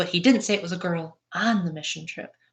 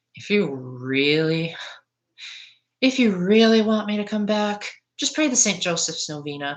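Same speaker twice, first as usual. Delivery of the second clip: dripping with heavy sarcasm. Speaker retells answering teenagers who asked him back on the mission trip, super sarcastically. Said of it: "I said super sarcastically".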